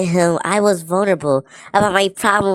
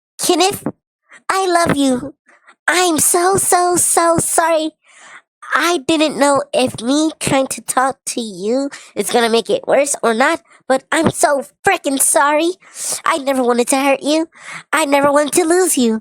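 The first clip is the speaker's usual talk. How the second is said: high, squeaky, put-on cutesy voice; 7 semitones higher than usual. Streamer reads a girl's message to kenneth aloud in a squeaky voice. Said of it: "We gotta listen to her to it in a squeaky voice".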